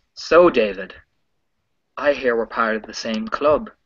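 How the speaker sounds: very authoritative, commanding, in-charge delivery. Narrating a role-play scene, voicing a character announcing to another character: very authoritative voice. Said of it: "announce in this very authoritative voice".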